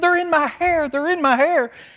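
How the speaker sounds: very high, loud terrified scream.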